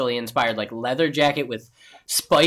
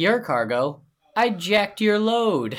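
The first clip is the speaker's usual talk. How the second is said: mock very serious tone, pitched higher; 6 semitones higher than usual. Retelling a character's line from a movie, imitating a dead-serious delivery. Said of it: "in the most serious".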